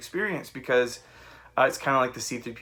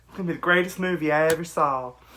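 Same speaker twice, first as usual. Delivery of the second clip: put-on, down-home southern country accent; 4 semitones higher, 4 dB louder than usual. Repeating own earlier reaction to a trailer: put-on southern country accent. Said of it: "your southern country self".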